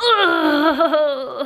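tearful groaning.

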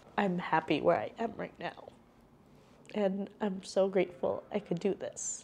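on the verge of crying. Thanking viewers for their support after quitting, on the verge of crying. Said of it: "Not me crying".

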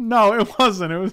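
speaking through laughter. Denying to another speaker that a joke was funny, laughing while talking. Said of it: "You're laughing, though".

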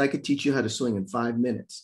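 usual speaking voice

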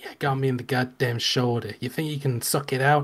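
put-on Philadelphia man's voice. Voicing a wounded character who asks a player to suck out poison: voicing the character Dingo. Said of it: "he just looks Philly, and he's just like".

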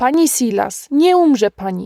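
firm, ringing, wholly certain, convinced exclamation. John reassures the bitten Mrs Silas, exclaimed with great conviction. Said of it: "wykrzyknął z tak wielkim przekonaniem".

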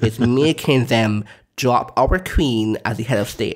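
ordinary talk

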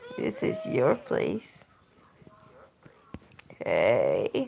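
weird, soft, swooping flirty tone. Talking with a friend, accidentally saying a line in a weird flirty tone. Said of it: "It sounded like I was trying to do some type of weird flirting thing".

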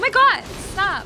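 high-pitched, loud yelling in alarm.

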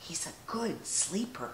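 hushed, very quiet, very low whisper. A narrator reads Papa speaking as Dot's friends come to see the baby: whispered. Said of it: "whispered Papa".

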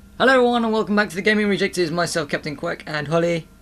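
rushed, high-pitched, rattled-off delivery. Host welcoming listeners back to the show with a co-host, said really quickly. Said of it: "You said that really quickly".

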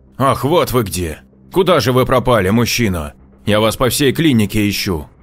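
high, cross, indignant, fussing outburst. Narrator reading a clinic administrator on finding the wrong man: angrily blurted, indignant. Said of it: "навстречу ему вышла миловидная девушка, лет 20-23, в белоснежной форменной одежде и планшетом для документов в руках".

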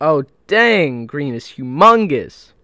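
very loud, all-out hollering yell. Streamer playing a team game mode, yelling. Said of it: "how much I'm yelling".

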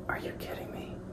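whispered aside. Retelling what someone said just as filming started: retelling a whisper. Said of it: "Vivian just whispers".

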